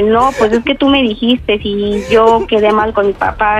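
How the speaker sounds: ordinary talk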